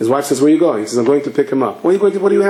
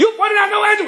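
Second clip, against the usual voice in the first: acted scream, higher. Retelling a car owner hearing the engine cost: imitating someone screaming. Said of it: "Will you stop screaming?".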